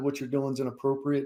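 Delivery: hushed speech. Retelling a correction of a drill sergeant: retelling a quiet warning. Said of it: "I very quietly said".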